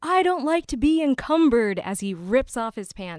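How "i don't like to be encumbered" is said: very loud, pitched-up, blurted yell. Retelling an actor's line as he rips off his pants: imitating someone shouting. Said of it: "finally he just shouts out".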